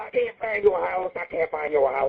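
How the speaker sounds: woman speaking in a manly-sounding voice. Retelling a Playboy Radio guest lost on her way over; imitating a woman talking like a man. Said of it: "She talks like a man".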